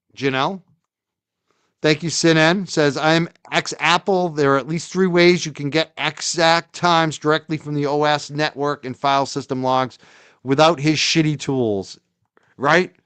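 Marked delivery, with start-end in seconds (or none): none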